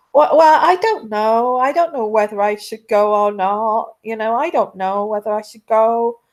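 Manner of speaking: badly done put-on American accent. Acting out Megan wondering whether to go to Trooping the Colours, in a bad American accent. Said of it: "I'm trying to do an American accent".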